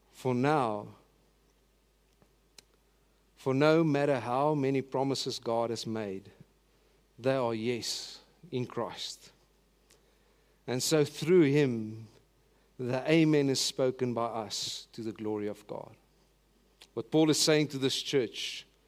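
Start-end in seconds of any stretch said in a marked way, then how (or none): 0.1-15.9 slow, unhurried, deliberate reading aloud. The speaker reads a bible verse aloud so listeners can follow, reading slowly. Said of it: "I'm just going to read it slowly".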